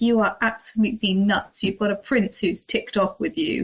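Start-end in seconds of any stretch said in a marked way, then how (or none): none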